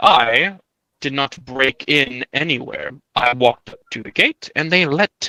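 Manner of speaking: calm, unruffled, half amused, half irritated tone. Narrating a dispute among gods, voicing a character's reply: calm, half amused, half annoyed. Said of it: "Hextor replies calmly, ... half amused, half annoyed".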